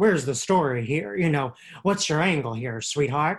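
dismissive, unimpressed, brushing-off put-down tone. Retelling how the boss shoots down story ideas: Robert Redford voice. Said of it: "That's my Redford voice".

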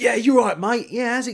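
put-on cocky, brash, matey lad voice. Mimicking a brash caller while talking on the phone, brash Jack-the-Lad voice. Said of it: "someone who's a bit of a Jack the Lad, a bit of a brash guy, you go".

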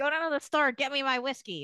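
high cigarette mom voice, ordering tone. Imitating little girls on TikTok playing a role: imitating the cigarette mom. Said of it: "pretend to be, like, the cigarette mom".

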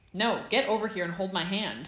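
loud, carrying, projected shout. Narrator reads a character shouting at another who ducked behind someone: shouting. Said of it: "James shouted".

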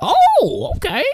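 sudden, very high, excited realization. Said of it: "he got extremely excited about that".

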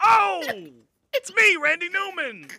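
pushy, shrill, aggressive bellow, very loud and high. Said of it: "I'm getting more aggressive as the bit progresses".

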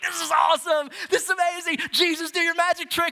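acted very high, all-excited, pumped-up cheering. Retelling how the disciples react to jesus, mock-excited. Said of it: "the disciples are all pumped".

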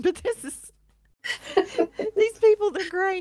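high-pitched laughing talk. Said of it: "I'm sorry I'm laughing".

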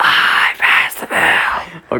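very slow, breathy, barely voiced near-whisper. Doing a quick Joe Biden impression for a podcast guest invite: Joe Biden impression. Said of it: "do a little Joe Biden".

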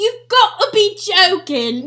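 very loud put-on British accent. Doing a bit about how British people talk, put-on British accent. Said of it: "British people be like".

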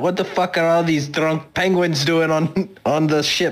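voice calling out. A tabletop player, in character on the ship, calls out: calling out. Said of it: "I'm going to call out".

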